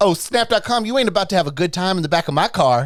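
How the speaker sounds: put-on camp, effeminate Southern accent, cop voice. Retelling what a cop said from the front of his car, effeminate southern accent. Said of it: "he had an effeminate Southern accent".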